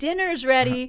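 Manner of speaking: high, full-throated, top-of-lungs yelling. Retelling how Leah called her siblings to dinner, retelling a yell at full lungs. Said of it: "just yells at the top of her lungs".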